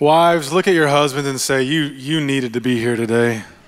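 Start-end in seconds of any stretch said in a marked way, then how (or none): 1.6-3.4 dry, needling, sarcastic, mocking tone. Showing wives how to say the line to their husbands: sarcastic. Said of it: "Kinda sarcastically like that".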